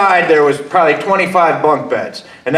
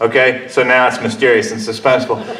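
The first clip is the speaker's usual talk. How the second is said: ordinary talk, nothing marked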